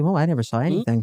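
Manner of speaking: mock condescending voice. Acting out imagined women looking their nose down: imitating a snooty, nose-down tone. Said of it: "they're gonna look their nose down and say".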